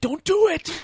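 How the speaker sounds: very high, panicked, pleading cry.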